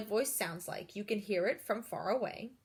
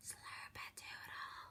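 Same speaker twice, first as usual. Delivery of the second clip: very soft, breathy whisper, as quiet as possible. Speaker demonstrates the whisper voice for Isabella: whisper. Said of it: "now whisper slurpadoodle".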